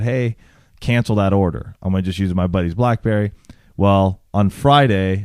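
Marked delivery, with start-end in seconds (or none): none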